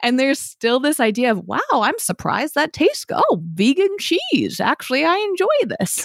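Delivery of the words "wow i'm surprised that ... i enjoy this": high, swooping, astonished, amazed voice. Imitating people surprised that healthy food tastes good: imitating [name]'s surprised-eater voice. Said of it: "That's one of your voices, [name]".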